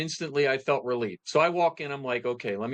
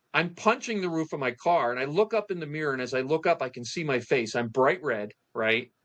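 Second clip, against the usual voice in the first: ordinary delivery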